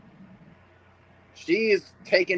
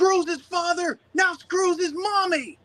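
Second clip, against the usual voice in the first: very high, slow, ranting commentator voice. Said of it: "Pat McAfee was like".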